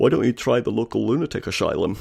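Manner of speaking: gravelly, rough, creaky, cutting film-star rasp. Retelling what an actor said at a premiere: Sean Connery impression. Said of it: "my Sean Connery impression".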